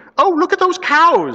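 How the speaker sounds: very high, bright, loud exclaiming. Narrator reading the aunt's line to Cyril amid his questions, exclaiming. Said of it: "exclaimed the aunt".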